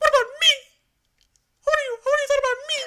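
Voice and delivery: very high, loud voice. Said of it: "His voice gets so high".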